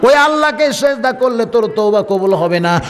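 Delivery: high, slow, drawn-out weeping.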